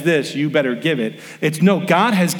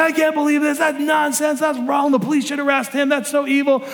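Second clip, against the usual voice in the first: mock outraged, high-pitched yelling rant; 11 semitones higher than usual. Retelling how a dad blew a gasket while waiting in line, retelling a yell. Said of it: "He's yelling".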